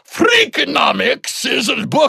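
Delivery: very high, slow, bizarre Scottish bleat. Recalling a segment, the speaker imitates the man introducing the book: bizarre Scottish bleat. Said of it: "such a bizarro Scottish bleat".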